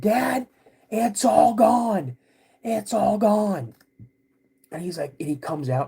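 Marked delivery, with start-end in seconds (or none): 0.0-3.8 very slow, high, stretched-out drawn-out yelling. Retelling calling out to dad about the missing food: imitating own past yelling. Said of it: "I just start yelling".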